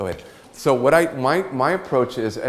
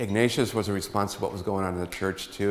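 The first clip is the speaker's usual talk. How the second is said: ordinary talk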